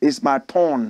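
put-on slow, low Nigerian-accented voice. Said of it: "in his own accent".

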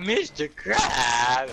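put-on whiny, sulky adolescent girl voice crying out. Describing a character's voice in a foreign SpongeBob dub, imitating a pubescent teenager. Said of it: "She sounds like a pubescent teenager".

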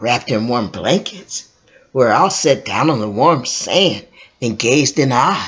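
ordinary delivery

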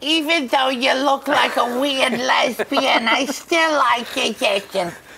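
impression of a woman. Imitating a woman who forgave the speaker: impression, slightly cockney. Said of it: "That's a pretty good impression".

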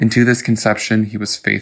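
ordinary delivery

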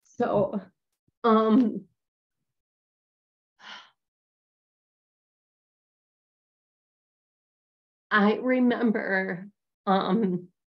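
voice holding back tears. Telling another speaker about childhood abuse, holding back tears. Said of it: "I'm gonna try to say this without crying".

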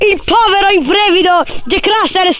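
mock, drawn-out, excited sports commentator voice. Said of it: "La telecronaca".

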